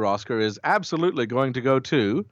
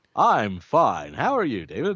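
swooping on-air radio announcer voice. Podcast co-host answering the host's greeting at the episode start, in announcer voice. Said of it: "I thought I'd do my announcer voice".

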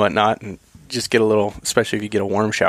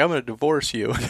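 put-on crying, raised pitch; 3 semitones higher, 3 dB quieter than usual. Retelling a rainy mountain hike, quoting a crying companion: imitating her crying. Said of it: "She's crying, and she's like".

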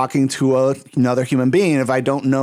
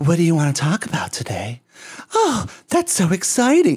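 put-on breathy, robotic female voice; 4 semitones higher than usual. Describing a chatbot ad to the others, imitating its breathy fembot voice. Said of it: "kind of a breathy you know fembot oh voice".

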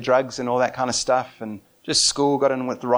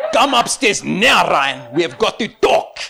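put-on South African Afrikaans accent; 6 semitones higher, 7 dB louder than usual. Act out a dad calling his son upstairs after trouble with the police, in a put-on strong Afrikaans accent. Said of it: "he put on a strong Afrikaans accent".

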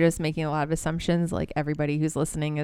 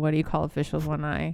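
ordinary talk

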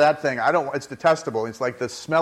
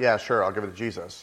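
mock dismissive eye-roll tone, lower, slower; 4 semitones lower, 4 dB quieter than usual. Speaker giving an example of how people answer, mimicking a dismissive eye-roll. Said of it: "almost with an eye roll".

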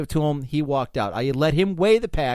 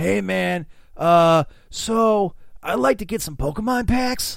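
put-on California hippie surfer dude voice; 4 semitones higher than usual. Retelling what a hippie who came into the shop said, California surfer guy voice. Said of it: "even talk like a California surfer guy".

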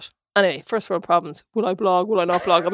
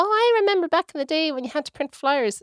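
put-on old lady voice, pitched up, rambling; 9 semitones higher than usual. Joking about sounding like an old lady going on: imitating an old lady reminiscing. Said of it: "I sound like an old lady going on about".

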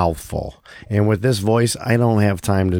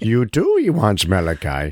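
put-on alien sage voice. Teasing the other speaker by recasting his quote, Yoda voice. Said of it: "fucking Yoda?".

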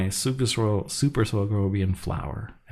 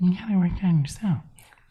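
very high put-on housewife accent; 10 semitones higher than usual. Showing how a housewife would say the line: imitating a housewife accent. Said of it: "you're not really saying it with the accent".

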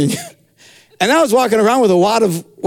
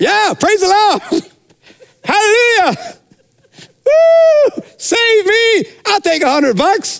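mock whooping cheer, very high and excited; 12 semitones higher than usual. Imagining people handed $100 bills, act out their mock-excited cheering. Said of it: "you would be doing it excitedly".

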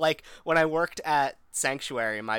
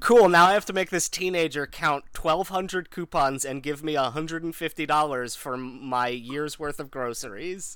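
ordinary talk

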